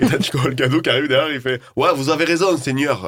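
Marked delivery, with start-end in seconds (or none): 1.8-3.1 put-on Marseille accent. Retelling a period film scene, imitating Chico Holgado's Marseille accent. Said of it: "Petit accent, petit accent".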